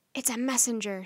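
ordinary talk

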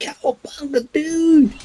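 very high, totally-rad skater hipster voice. Complaining about Michelangelo's voice acting, showing how he should sound: 90s hippie hipster voice. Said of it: "It should sound like one of those 90s kind of hippie hipsters".

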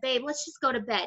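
normal talking voice

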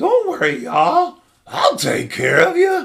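very high, sing-song character voice, pitch swinging widely. Saying what Marshmallow Jesus says to everyone: Marshmallow Jesus voice. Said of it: "That's my voice for Marshmallow Jesus".

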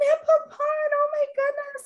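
very high, trembling, shaking, tearful bawling voice. Retelling a phone call, imitating the woman on the other end, her shaking, tearful voice. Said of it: "I could hear her voice shake".

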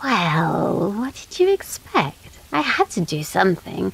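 haughty, aloof, unbothered, snooty talking cat voice. Narrator reading the cat's reply after being shown a hand, snooty cat voice. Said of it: "But it also features a cast of quirky, funny characters, including opinionated little folk (fairies), a snooty cat and a whole bunch of talking animals".

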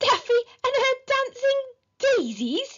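very high, sputtering voice. A boy staring at another boy, repeating his words, spluttered. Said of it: "he spluttered".

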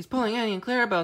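put-out, cross, sulky, quick and high. A character sees another pulling his coaches, sulking crossly. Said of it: "Thomas sulked crossly".

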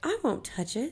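sullen. In the loft, Doodle refuses the narrator's demand, sullen. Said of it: "he said sullenly".

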